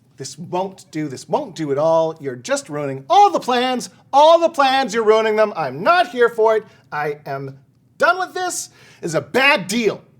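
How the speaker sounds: exasperated, loud, rising, fed-up, full-on rant. Voicing Green Steve, who is fed up with the party's plans: Green Steve fed up and ranting. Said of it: "Green Steve, uh, and he's just full on like".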